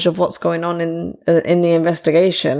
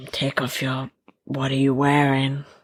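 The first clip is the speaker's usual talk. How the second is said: fake, low, hesitant, unconfident creepy voice; 4 semitones lower, 6 dB quieter than usual. Joking after a friend imagines her phone ringing: put-on creepy pervert voice. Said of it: "I was trying to be a pervert".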